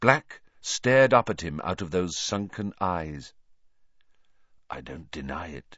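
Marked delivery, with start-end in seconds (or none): 4.7-5.8 very soft, very quiet, very low. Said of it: "he said very quietly".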